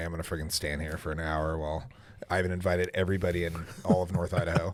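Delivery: mock deep, low, begrudging, grudging mutter. Retelling standing in a long grand-opening line: imitating own begrudging grumble.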